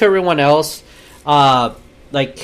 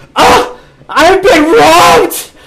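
mock-screaming, much higher and louder; 8 dB louder than usual. Speaker acting out someone's outburst in a story, imitating someone screaming. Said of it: "And then starts screaming".

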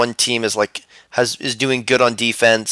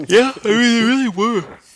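very high speech through a yawn; 11 semitones higher than usual. Discussing a match, the speaker answers while yawning. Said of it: "Sorry, I yawned there".

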